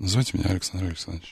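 very quiet, toneless, colorless, quick hush. Recalling FSB officers, the speaker imitates one introducing himself: very quiet, colorless voice. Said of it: "ну там надо как-то еще тише. И как-то совсем бесцветно".

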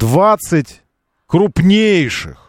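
крупнейших drawn out, stressed, high and slow.

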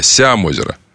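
Сямозеро with stress on the first syllable Ся. Told to read a place name with the proper stress, Сямозеро stressed on first syllable. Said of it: "Надо ударение на «я»".

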